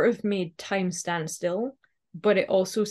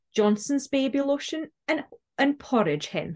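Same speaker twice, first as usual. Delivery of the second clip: put-on light Scottish brogue, much higher; 6 semitones higher than usual. Retelling her grandma's reply to a compliment, in a little Scottish brogue. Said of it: "in her very beautiful, like, little Scottish brogue".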